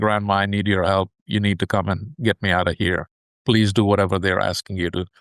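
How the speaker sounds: mock-tearful pleading voice. Retelling a scam clip of a girl pleading with grandma, imitating a tearful voice. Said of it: "with a tearful voice saying".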